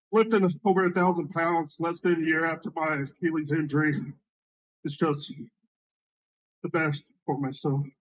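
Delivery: choked up, fighting off tears through the words. A lifter speaking about his own result after an injury, trying not to cry. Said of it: "He's trying not to cry".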